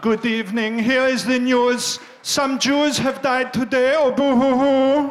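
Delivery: very loud, mournful German newsreader voice. Imagining a news broadcast, in a sad german voice. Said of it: "a sad German voice".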